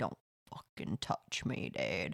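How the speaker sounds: mock hushed, hard whispered tone. Retelling what a guy behind said to a drunk: imitating a stone-faced warning. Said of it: "he was stone-faced".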